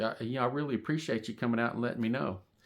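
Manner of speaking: mock sarcastic put-on tone. Retelling what was said to a worker who never came out: retelling own sarcastic remark. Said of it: "being sarcastic".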